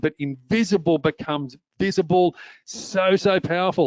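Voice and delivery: thrilled, enthusiastic, excited delivery with slow emphasis. Explaining LinkedIn search results to viewers: excited. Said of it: "hear the excitement in my voice".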